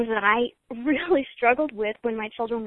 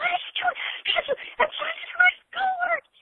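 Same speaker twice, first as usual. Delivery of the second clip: put-on very high-pitched, rushed, mild young child's yell. Retelling a six-year-old girl screaming at her toe-biting brother, imitating a child screaming. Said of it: "She starts screaming at him".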